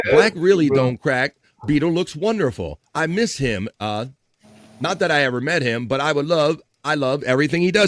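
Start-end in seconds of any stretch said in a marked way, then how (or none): none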